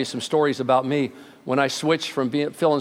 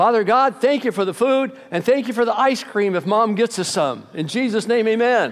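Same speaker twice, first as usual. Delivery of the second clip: put-on high, raised, proud little boy voice; 8 semitones higher than usual. Telling a story about a little boy asked to say grace, imitating a boy's proud, raised voice. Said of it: "the little boy raised his voice very proud".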